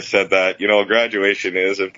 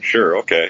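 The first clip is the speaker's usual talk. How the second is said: mock unenthused, eye-rolling tone. Retelling a reply to an offer to hear a CD: imitating an eye-rolling reply. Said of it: "rolling her eyes".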